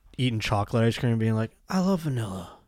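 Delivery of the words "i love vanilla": dazed, absent-minded, totally zoned-out musing. Imagining someone eating chocolate ice cream: Joe Biden impression. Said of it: "I just imagine Joe Biden being like".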